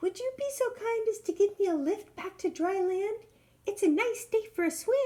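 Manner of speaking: tiny, squeaky, very high, wee small voice. Narrator voicing an ant calling out to a turtle, wee small voice. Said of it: "cried the ant in his wee small voice".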